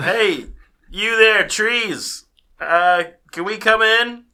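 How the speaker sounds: high, booming, very loud yell. A player's character calls out to trees fifty yards away, yelling at the trees. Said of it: "what are you yelling?".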